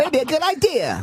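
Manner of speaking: put-on high, shouted, old Hollywood 1940s movie kid voice.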